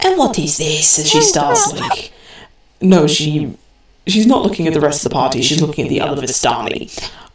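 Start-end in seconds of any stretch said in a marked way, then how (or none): 0.0-1.0 put-on grandmotherly telling-off voice. Narrator voicing a Vistani woman turning to the others: scolding grandmother voice. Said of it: "a scolding grandmother just goes".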